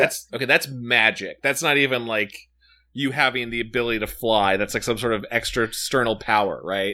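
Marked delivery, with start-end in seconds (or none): none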